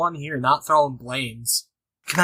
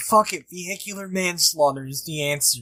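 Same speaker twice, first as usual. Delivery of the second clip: ordinary talk, nothing marked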